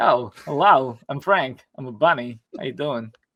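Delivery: slow, deliberate voice, leaning on each word. Retelling a commentary joke about casting Frank the Bunny: Christopher Walken impression. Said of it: "He does a Christopher Walken impersonation".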